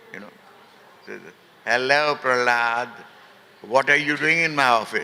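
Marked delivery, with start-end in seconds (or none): 1.6-5.0 imitated Punjabi American accent. Recounting a man greeting the speaker in his office, imitating Mike's Punjabi American accent. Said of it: "in his typical Punjabi American accent".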